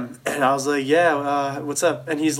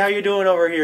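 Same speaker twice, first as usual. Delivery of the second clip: put-on nice, mild, gentle Canadian accent, pitched up; 6 semitones higher than usual. Retelling what the Niagara police officer said to them: gentle Canadian accent. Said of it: "There's some like nice gentle Canadian accent".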